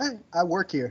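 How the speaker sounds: soft, pointed, sarcastic retort tone. Speaker recounting being questioned at a door by a woman, retelling own sarcastic reply. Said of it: "very sarcastically, I was like".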